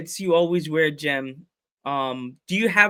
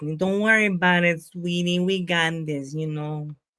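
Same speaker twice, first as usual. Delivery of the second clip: put-on woman's voice with Latin American accent. The speaker reassures Jen, doing an Aunt Lizette impression. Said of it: "Gotta talk in my aunt Li- my aunt Lizette's voice".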